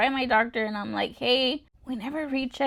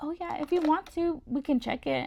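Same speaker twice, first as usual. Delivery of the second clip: breezy, casual, unbothered, nonchalant tone; 4 semitones higher, 4 dB quieter than usual. Retelling a doctor's reply about rechecking cholesterol: imitating a nonchalant doctor. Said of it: "he was just so nonchalant".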